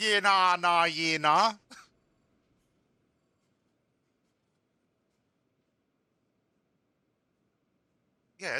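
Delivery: imitated Australian accent. Speaker trying out an australian accent they plan to research more. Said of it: "how to do an Australian accent".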